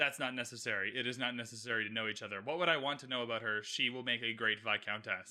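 mock very low, flat, emotionless monotone. Recapping a scene, voicing Anthony's reply to Mama Bridgerton, mock-deadpan. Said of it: "just deadpan, just no emotion".

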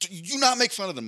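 very high, insistent and assertive voice. Retelling how a coached player warned against mocking a band: imitating an assertive warning. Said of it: "she's very assertive".

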